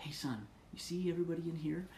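whispered delivery. Father retelling leaning over to his son in a meeting, re-enacting a whisper. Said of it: "I promise, son, I'm whispering".

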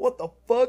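mock very high, very loud, shrill terrified yell. Retelling a friend's reaction while watching him rage: imitating a terrified friend. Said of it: "like he was so fucking terrified".

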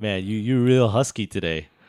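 mock rude, condescending tone. Acting out a made-up friend insulting a waitress: imitating a rude, condescending remark. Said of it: "he says something really rude and really condescending".

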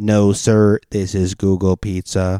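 put-on flat, monotone robotic voice. Acting out a phone call, answering as Google in robot voice. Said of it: "I'll do robot voice for Google".

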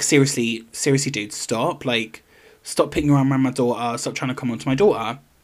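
ordinary talk

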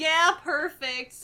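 put-on sarcastic tone. Retelling a character's eye-rolling reply, imitating a sarcastic reply. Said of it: "So he was being sarcastic".

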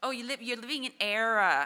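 loud, smug, pedantic mock know-it-all voice.

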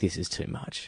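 breathless, soft whisper full of awe.

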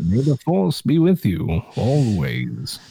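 sing-song character voice, pitch swooping and swaying. Excited about Star Wars on a call, do your Ben Kenobi impression. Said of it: "That's my Ben Kenobi impression".

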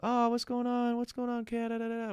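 tiny, very high-pitched, squeaky cat voice. Retelling talking to a cat-shaped pillow, imitating own cat voice. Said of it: "talking to it in a cat voice".

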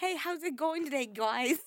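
put-on thick, laid-on Brooklyn accent. Recalling a four-year-old girl the speaker used to babysit, in a heavy brooklyn accent. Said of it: "throwing that heavy Brooklyn accent on there".

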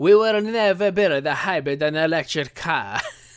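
heavy put-on Italian accent. Quoting what the carmaker once said, in a put-on Italian accent. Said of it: "Forgive my Italian accent".

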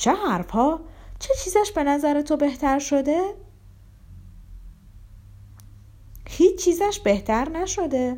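high, amazed, angry, a touch scared. Lizaveta Prokofyevna asks how the sick man is better; astonished, angry, a little frightened. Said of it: "با لحنی که حیرت و خشم و می شود گفت اندکی نیز وحشت در آن بود".

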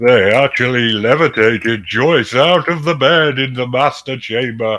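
slow alien voice done as a cartoon vampire. Reading a story about strange experiences aloud, the speaker keeps up a Count Chocula voice. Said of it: "That's more Count Chocula".

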